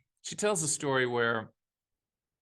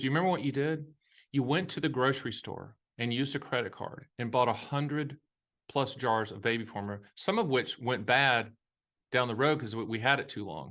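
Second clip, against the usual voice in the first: usual speaking voice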